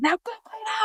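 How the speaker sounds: acted furious yell. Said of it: "So I yelled at them".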